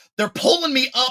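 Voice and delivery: very high shouted yell. Retelling a hose problem on a dive ascent: retelling own past yelling. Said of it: "I'm yelling it at this point".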